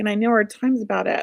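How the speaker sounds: plain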